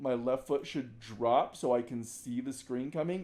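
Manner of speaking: ordinary talk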